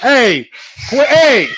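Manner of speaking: shouting. Breaking off mid-question to yell at noisy cats: yelling. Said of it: "I didn't mean to yell".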